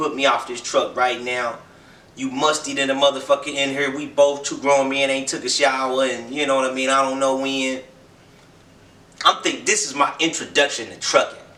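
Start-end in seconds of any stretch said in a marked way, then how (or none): none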